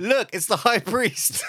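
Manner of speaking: very high-pitched, sudden shout. Narrating a sudden distraction, shouting to point behind someone: shouting. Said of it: "suddenly point behind him and shout".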